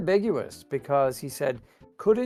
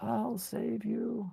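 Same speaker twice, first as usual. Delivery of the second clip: put-on voice, much higher and much quieter; 8 semitones higher, 11 dB quieter than usual. Playing a game with a teammate, calling out in a high-pitched put-on voice. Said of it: "when you do like the high pitched voice there".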